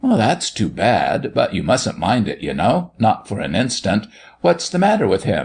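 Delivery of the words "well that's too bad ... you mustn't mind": usual speaking voice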